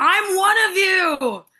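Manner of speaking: loud, screaming voice.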